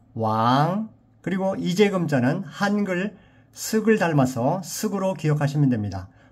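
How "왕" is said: the syllable 왕 held long. Teaching how to pronounce a Chinese character's name: long drawn-out 왕. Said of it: "왕을 길게 왕".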